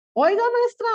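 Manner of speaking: put-on high, loud, eager, curious child voice.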